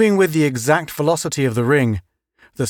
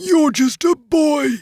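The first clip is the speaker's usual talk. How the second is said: put-on very high, cracked, wheezing old voice; 12 semitones higher than usual. An old man, having removed Henry's space helmet, speaks to him, wheezing in a cracked voice. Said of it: "the man wheezed in a cracked voice".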